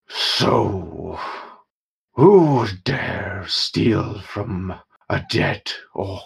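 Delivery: shouting, graveyard-like voice. A narrator voices a dead orc's ghost, shouting in a voice like a graveyard given speech. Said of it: "a voice that just sounds like a graveyard given speech shout up".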